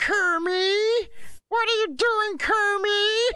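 very high squeal, "kermit" drawn out. Asked what Piggy is like, try it for the first time, in a Miss Piggy voice. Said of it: "Not bad".

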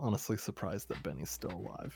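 very soft, hushed whisper. Leaning over to speak to Carter, in a quiet whisper. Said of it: "kind of quiet whisper".

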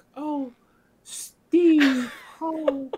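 high, adoring, clingy, doting exclamation. Retelling how she acted while hugging steve: imitating her hugging steve. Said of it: "the way that she was hugging Steve, she was like".

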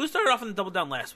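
quick, high delivery with the voice breaking midway. Asking the other speaker a question, voice cracking. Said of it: "My voice cracked".

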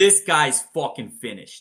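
best attempt at a Boston accent. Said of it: "I'm going to do my best Boston accent".

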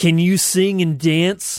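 put-on radio announcer. Attempting a radio voice to read an ad for another speaker: radio announcer voice. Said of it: "I'm going to attempt a radio voice".

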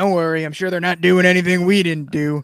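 put-on creepy character voice. Speaker recapping a show scene, quoting Jimmy answering Kirsten, in a mock-creepy Jimmy voice. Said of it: "But in like the creepiest voice ever".

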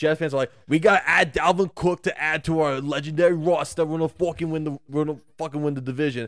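put-on Boston accent, put on. Imitating what Jets fans are saying, in a Boston accent. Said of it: "A Boston accent?".

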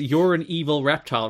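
ordinary delivery

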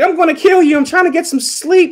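mock, very high-pitched, playfully annoyed tone. Retelling what a woman said to a man checking on her: jokingly mad. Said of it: "jokingly mad".

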